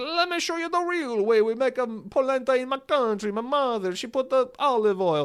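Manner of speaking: put-on over-the-top Italian accent, pitched very high. Quoting a guy from italy who shared a recipe: italian accent. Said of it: "I can do a racist Italian accent".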